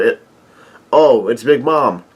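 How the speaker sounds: ordinary talk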